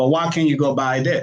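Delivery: ordinary delivery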